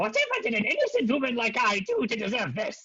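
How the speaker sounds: very high-pitched voice, swooping. Narrating a game, a Kenku throws down its tools and speaks: Kenku mimicking Maggie's voice. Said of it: "says in Maggie's voice".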